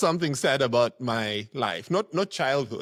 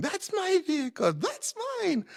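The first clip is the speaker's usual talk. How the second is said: put-on children's voices shouting at a very high pitch. Retelling kids calling out cars on the road: imitating kids shouting. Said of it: "I can listen to the kids shouting".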